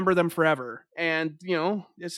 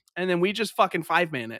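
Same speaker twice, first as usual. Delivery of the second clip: usual speaking voice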